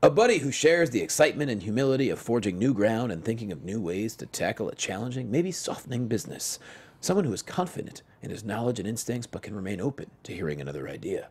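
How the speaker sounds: put-on somber voice. Reading out a description of the ideal buddy, in a mock-somber tone. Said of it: "say it in a very um, somber tone".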